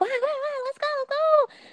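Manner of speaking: mock very high, soft, giddy, excited fan cheering. Telling a story about greeting a senpai, the speaker acts out being super excited. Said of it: "I was like super excited".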